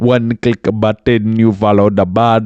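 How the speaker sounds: mixed accent, half Indian, half Jamaican. Podcast host repeats a line in a vague Indian-Jamaican accent. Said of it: "It was kind of Indian, kind of Jamaican".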